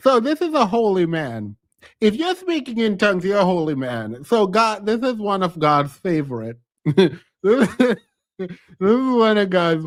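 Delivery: words broken up by laughing. Speaker setting up a talk on dealing with cheating, laughing while talking. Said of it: "I'm just laughing".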